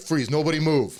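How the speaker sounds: loud, high, barked commanding shout. Speaker retells a man shining a flashlight on their group, retelling a loud shout. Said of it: "you just hear this loud voice like".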